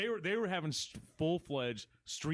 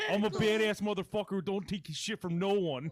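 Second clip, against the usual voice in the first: loud, put-on Canadian accent; 4 semitones higher, 5 dB louder than usual. Joking about shopping cart jousting: put-on Canadian-sounding voice. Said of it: "That did sound very Canadian".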